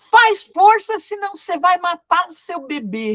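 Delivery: harsh barked speech.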